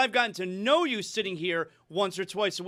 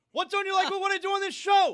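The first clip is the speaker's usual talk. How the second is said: loud, very high-pitched, over-the-top delivery; 11 semitones higher than usual. Answering a criticism that he is too loud: speaking loudly. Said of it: "you could have said that a little softer".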